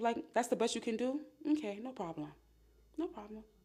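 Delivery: unbothered condescending tone. Showing how to respond to a partner texting another woman: cool dismissive tone. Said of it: "You see that tone I just used?".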